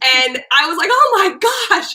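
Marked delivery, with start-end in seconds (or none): 0.9-1.9 very high-pitched, thrilled, excited shout. Retelling jumping up from the couch at a free kick: imitating own excited yell. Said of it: "I jumped up and started yelling".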